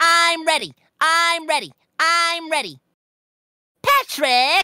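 very high, repeated cartoon-style calling. Doing a SpongeBob impression for the others on stream: SpongeBob voice. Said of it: "That shit's dead on scary".

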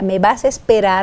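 ordinary talk

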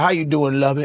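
smooth game show host voice. Retelling a game show host greeting a contestant: Richard Dawson impression. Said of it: "he's like".

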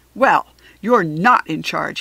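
enraged, very loud, booming furious outburst. Reading a story, a man answers a woman, in a furious voice. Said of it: "he told Lucille in a furious voice".

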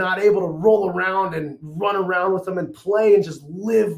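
ordinary talk

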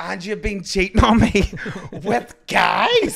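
full-volume, shrill, very loud screaming outburst. Telling about a girl slapping a man on the subway, imitating a woman screaming. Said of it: "she starts screaming all over the subway and she's like".

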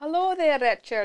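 Scottish-accented speech. Giving a requested sample of her old accent: Scottish accent. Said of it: "Give me a little sample".

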